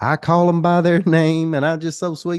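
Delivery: high, loud, sweet sugary country twang.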